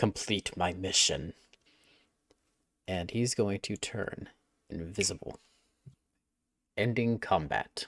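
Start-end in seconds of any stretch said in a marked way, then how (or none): 0.0-1.3 muttered, much lower and quieter. Describing a character's action right before he turns invisible, muttered under breath. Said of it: "just going to mutter under his breath".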